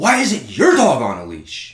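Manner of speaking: swooping, drawn-out, screamed delivery. Retelling how a lady on the trail screamed at the speaker: imitating a woman screaming. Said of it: "this lady starts screaming at me".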